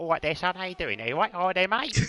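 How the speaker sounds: put-on Brummie Cockney accent. Showing how people with that accent greet you: Brummie Cockney accent. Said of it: "the Brummie Cockney accent".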